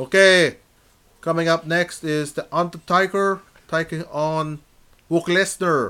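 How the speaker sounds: bad put-on clumsy broken-English foreign accent. Showing how a match commentary might sound: worst put-on foreign accent. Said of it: "in my worst, like, a guy who's come over from another country".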